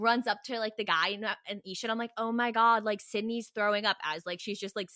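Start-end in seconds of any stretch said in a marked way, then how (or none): none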